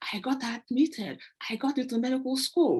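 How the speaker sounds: ecstatic, high, excited yelling. Retelling a phone call announcing admission to medical school: imitating an excited scream. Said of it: "and he was screaming".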